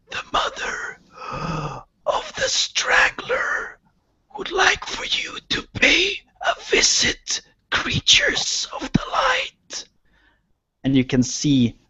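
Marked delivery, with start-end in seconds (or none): 0.1-9.8 rasping creature voice, pitched way up. Narrator voicing a Freyin head speaking through its empty voice box: raspy, drawn-out voice. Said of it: "it speaks in a raspy, drawn-out voice".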